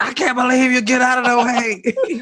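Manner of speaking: very high, shrill, very loud yelling. Retelling a phone video about traffic: imitating own yelling. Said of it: "yelling into my phone".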